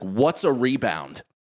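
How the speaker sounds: mock-angry, acted, snapping outburst. Recalling finally snapping at a man yelling vague instructions during a game: retelling an angry outburst. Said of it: "And I finally like snapped".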